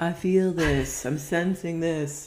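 weird mystical woo-woo voice, very drawn out. Mocking how people talk about intuition: weird voice. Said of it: "With that weird voice".

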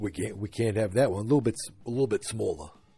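slight put-on New York accent. Recapping a Christmas tree scene, the speaker quotes Henry Francis: New York accent. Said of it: "He's got a little bit of a New York accent".

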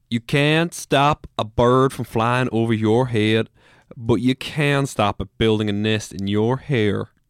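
loud, best-effort Appalachian accent. Asked for a West Virginian proverb, giving an Appalachian saying in best Appalachian accent. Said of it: "I'm going to do it my best Appalachian accent".

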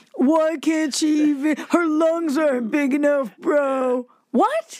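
put-on slow, drawn-out stoner drawl. Recounting what people said about her cannabis teaching, in a stoner voice. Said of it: "i love your stoner voice".

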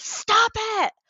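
mock scream, shrill, very high and snapping. Retelling snapping at her young son: retelling her own scream. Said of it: "and I screamed".

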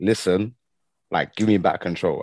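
ordinary delivery

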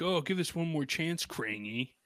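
high, jeering, half-begging, mocking taunt. Discussing a cartoon, quoting henchmen mocking their boss, in a mock Rocksteady and Bebop taunting. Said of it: "they're almost mocking him when they're saying like".

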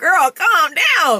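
mock scolding, high and slow.

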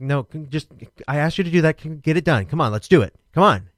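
loud, pushy, impatient urging voice. Retelling urging little kids on while their team was losing: imitating own impatient urging. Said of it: "I change".

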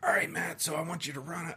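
gruff put-on voice with clumsy, unconvincing accent.

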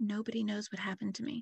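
put-on creepy child's whisper. Retelling a tape played to a suspect: imitating a creepy child's whisper. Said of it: "creepily whispering".

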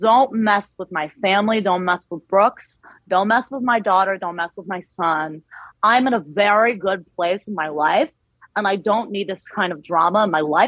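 put-on Jersey accent slowly creeping in. Trying an impression of Meredith live: Meredith impression drifting into Jersey. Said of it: "now it's getting like Jersey".

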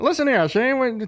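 vintage radio announcer. Describing how they talk in old-time radio style, old-timey radio announcer voice. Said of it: "like old time radio, we're like".

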